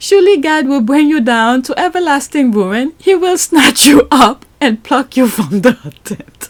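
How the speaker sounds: holding back laughter. Speaker reads a quoted religious passage aloud, holding back laughter. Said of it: "I'm trying".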